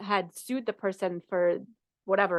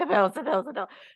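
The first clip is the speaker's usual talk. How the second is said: grumbling motherly tone, repeated over and over; 3 semitones higher than usual. Describing family money habits, the speaker imitates the mother, imitating mom grumbling. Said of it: "always grumbling about the bills".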